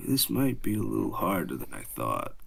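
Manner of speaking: barely audible, very quiet half-whisper. As Cade, crouching down and talking to the player, half-whispering very quietly. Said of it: "he whispers to you real, real quietly".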